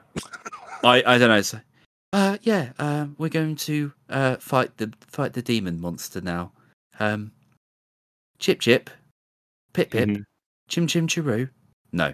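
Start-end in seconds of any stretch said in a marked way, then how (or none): 2.1-11.5 twee, whimsical put-on storybook British accent. Mocking the voice acting in a game trailer: whimsical British voice. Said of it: "whimsical Brit voice for every character".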